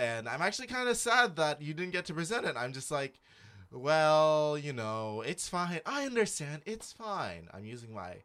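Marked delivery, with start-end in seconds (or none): 3.7-7.5 slow, falsely forgiving, charitable but deadly tone. Retelling a reply to someone: imitating a charitable but deadly voice. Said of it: "my charitable, but also very deadly voice".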